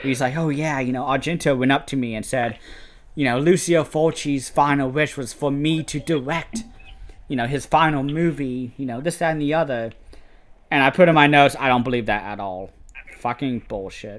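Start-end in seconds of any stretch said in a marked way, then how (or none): none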